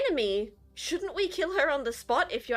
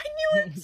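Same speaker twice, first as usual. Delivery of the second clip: very high-pitched, thrilled, excited voice; 14 semitones higher than usual. Voicing a character who learns the others are spies: excited. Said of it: "he gets excited".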